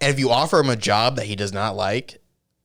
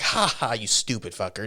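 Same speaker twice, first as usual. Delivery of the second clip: put-on taunting, mean, mocking laugh; 4 dB quieter than usual. Retelling a scene where a woman laughs in his face: imitating mocking laughter. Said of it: "she just laughs in his face".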